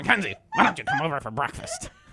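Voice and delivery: loud, swooping, angry ranting voice. Retelling what the angry caller said: imitating an angry caller. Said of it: "Who just called up and was angry".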